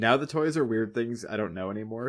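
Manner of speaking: ordinary talk, nothing marked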